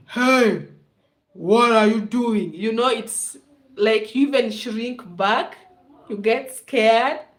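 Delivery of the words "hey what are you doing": put-on deep male voice. Describing how angry men yell, the speaker imitates a deep-voiced man. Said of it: "when a man has that deep voice and they're like".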